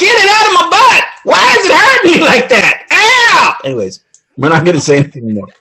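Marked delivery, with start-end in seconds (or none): 0.0-3.6 very high, drawn-out, slow, pained yelling. Joking about what someone would yell running through his house: imitating Jeff Bezos yelling in pain. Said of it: "Jeff Bezos would be running through his house going".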